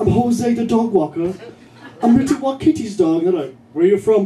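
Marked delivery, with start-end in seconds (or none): 0.0-3.3 clumsy fake British accent, pitched up. Telling people who ask what he's doing there, in a bad british accent. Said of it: "I do a bad British accent".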